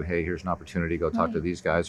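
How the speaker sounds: ordinary talk, nothing marked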